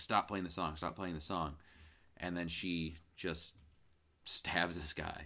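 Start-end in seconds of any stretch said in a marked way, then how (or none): none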